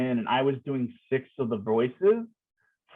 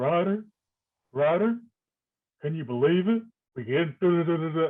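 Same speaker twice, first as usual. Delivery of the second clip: put-on voice like an old drill sergeant; 3 semitones higher than usual. Retelling talking like an old drill sergeant: Hank Hill voice. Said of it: "who has a very Hank Hill voice".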